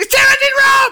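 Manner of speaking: full-throated game-show announcer scream, building. Doing the show's opening intro after being asked for the scream: screamed announcement. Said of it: "do the scream".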